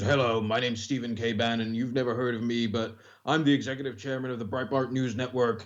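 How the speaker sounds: put-on impression, big, resounding voice. Retelling a phone call from Bannon: Steve Bannon impression. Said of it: "Does he know that you do a like-for-like impression of him?".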